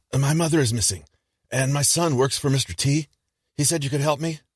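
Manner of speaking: raspy, hoarse heavy smoker's voice, hurried. Reading a story where an older woman asks for help: hoarse heavy smoker's voice, rushed. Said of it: "with the hoarse voice of a heavy smoker".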